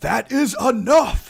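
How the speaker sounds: loud booming shout. Ogma suddenly yells out in a voice never heard from them before, a booming yell. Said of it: "yells out with this booming voice".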